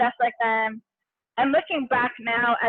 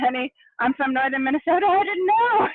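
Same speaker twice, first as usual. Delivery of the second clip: mock crying, higher pitch; 3 semitones higher than usual. Retelling what the speaker's father said at the bottom of the stairs, imitating dad crying. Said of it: "he started crying too".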